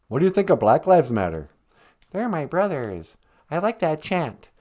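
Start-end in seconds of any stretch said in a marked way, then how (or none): 2.1-4.3 frog puppet character voice. Greeting the show as a caller: Kermit the Frog voice. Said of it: "Kermit the Frog, welcome to the show".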